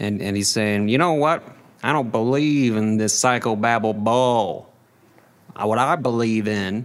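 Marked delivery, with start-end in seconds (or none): 0.9-6.8 put-on Down East Maine accent. Act out a client who is court ordered to go to therapy, in a put-on Maine accent. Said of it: "I don't know why he has this accent".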